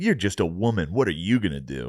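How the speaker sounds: put-on, taunting movie villain voice. Talking about action movies, speaker imitates a taunting movie villain. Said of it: "the bad guys in every movie. They're like".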